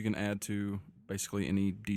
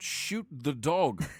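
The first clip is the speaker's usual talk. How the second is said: pitched-up voice, loudly called out; 6 semitones higher than usual. Narrating Hal seeing him grab his bow, yelling out. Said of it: "he yells out".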